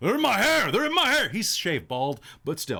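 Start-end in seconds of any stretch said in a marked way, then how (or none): 0.0-1.3 very high, loud, shrill screeching cry. Voicing a camper bothered by noises in camp: screeching in a big bassy voice. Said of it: "screech up in his big bassy voice".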